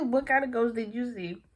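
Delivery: ordinary delivery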